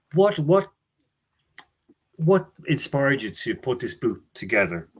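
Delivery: sudden Irish border accent, Meath/Louth. Interviewing a guest about his book on Messi: sudden Meath/Louth accent. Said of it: "you took a sudden very Meath border slash Louth accent".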